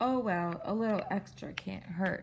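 ordinary delivery, nothing marked

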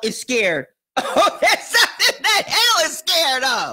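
laughing through the words. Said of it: "I'm laughing".

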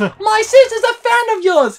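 very high, very loud, drawn-out rising yell. Retelling calling up to a performer above the crowd: imitating shouting up at someone. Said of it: "shouting at each other".

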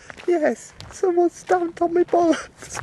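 very high, squeaky put-on grandad voice. Speaker acting out a made-up chat between a grandson and Grandad, in a very high grandad voice. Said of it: "You got a very high voice, Grandad".

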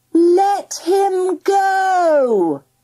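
huge, commanding, loud, high mighty cry, stretched out. Reading a story: she lifts her arms and cries out in her loudest, most enormous voice. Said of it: "she cried in her loudest, most enormous Amanda Phillips the Mighty voice".

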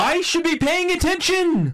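very high, slow, stunned, exasperated disbelief.

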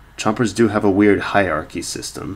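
ordinary delivery

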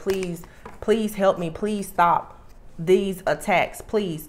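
acted begging and pleading. Addressing listeners, voicing their past prayers to god, acting out begging and pleading. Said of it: "begging and pleading like with God".

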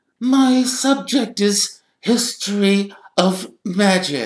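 put-on very high, dry, wheezy delivery. Reading a novel aloud, voicing Professor Binns in a dry, wheezy voice. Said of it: "he said in his dry, wheezy voice".

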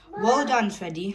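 plain reading voice

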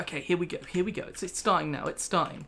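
ordinary talk

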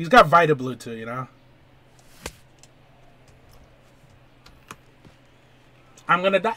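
nervous, anxious, nerves spilling out. Streamer realizes he is about to play against Kyle: nervous. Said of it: "I'm so nervous right now".

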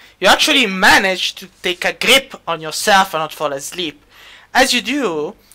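ordinary delivery

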